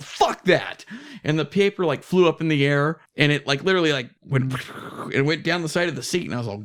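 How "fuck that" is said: plain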